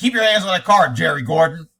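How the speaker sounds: loud, sarcastic, mocking police officer voice. Retelling what a cop told a man: imitating a sarcastic cop. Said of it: "this cop is being very sarcastic".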